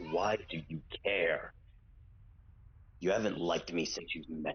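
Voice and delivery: groggy, very low, lifeless dead-inside voice. Lying in shock on the ground, Don answers the one taunting him: groggy, dead inside. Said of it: "in a groggy, dead inside voice".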